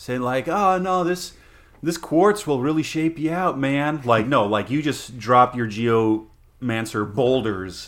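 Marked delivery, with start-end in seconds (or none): 0.5-4.0 easygoing, laid-back, lounging voice, pitched up. Joking about a druid lounging under a tree: mock lounging druid. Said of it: "druid, uh, just, like, lounging under a tree, saying".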